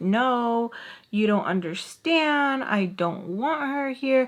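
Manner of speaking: play-acted rude, nasty tone with cussing. Retelling a housemate on the phone: imitating someone nasty and rude. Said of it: "nasty and rude".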